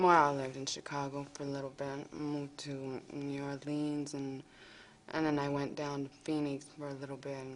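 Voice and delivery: soft, barely carried mumbling, words run together. A witness in a speaking-skills example, mumbling, too soft. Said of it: "Avoid mumbling or talking too softly like this witness does".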